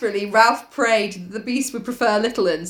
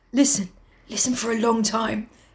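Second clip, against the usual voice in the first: whispering in a hushed put-on Essex accent. Speaker tells the other to listen closely: whispering in an Essex accent. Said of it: "I can't whisper in an Essex accent".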